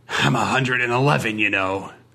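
hissing delivery. Narrator reads a man on a train hissing at a frowning lady, hissing. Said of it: "he bared his remaining teeth and hissed".

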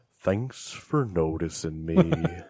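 quiet, subdued donkey voice. Speaking up in a group conversation, in an Eeyore impression. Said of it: "That's my Eeyore".

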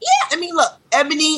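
voice jumps high mid-sentence. Answering a question about Ebony: voice going high. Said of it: "your voice just went high".

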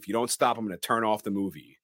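ordinary talk

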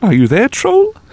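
tiny little voice at a very high pitch. Retelling how Faroe knocked on the bridge and called to the troll: tiny voice. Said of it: "and say in a tiny voice".

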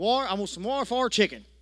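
put-on country accent. Recalling ordering at a chicken restaurant as a little country boy, in a country accent. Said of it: "I let my country accent come out".

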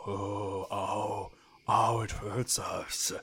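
nice, kindly woods creature voice. Voicing a woods creature hit by a thrown rock: nice voice of woods creature. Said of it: "nice voices that say nice things".

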